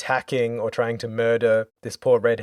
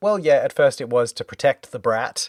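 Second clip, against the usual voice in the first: ordinary talk, nothing marked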